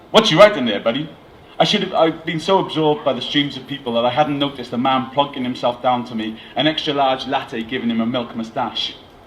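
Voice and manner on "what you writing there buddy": clumsy, fake American accent, raised voice. Telling a story, voicing a man who sits down beside the narrator, bad American accent. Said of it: "my very bad American accent".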